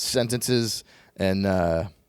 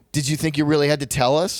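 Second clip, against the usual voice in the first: put-on irritated tone, higher; 4 semitones higher than usual. Retelling a reply to the production manager's reminder: retelling a mad retort. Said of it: "I just got mad at him".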